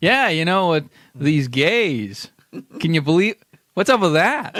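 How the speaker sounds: stage performance voice with one word drawn out. Showing how a comedian reads his tweets: Norm Macdonald performance voice. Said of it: "He's got his performance voice".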